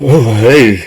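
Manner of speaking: relaxed borrowed voice. Voicing a ghost who has just entered a player's body: speaking in the player's voice. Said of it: "He says it with your voice".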